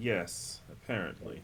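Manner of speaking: breathy, hushed, deadpan, dry sarcastic tone. Answering an old prisoner in character: sarcastic. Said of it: "sarcastically say".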